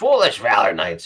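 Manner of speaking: loud, croaking, withered voice. Narrating the ghost's words to the Valor Knights: Ghost of Tombstone's withered croak. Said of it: "he croaks out in a withered voice".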